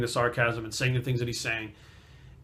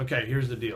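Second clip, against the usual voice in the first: normal talking voice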